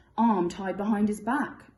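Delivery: ordinary delivery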